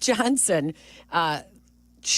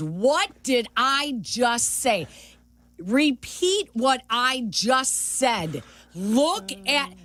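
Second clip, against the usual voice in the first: mock stern tone, spoken very slowly; 4 semitones higher than usual. Retelling how a coach corrected them like a parent: imitating a stern coach. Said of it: "he was being very stern with me".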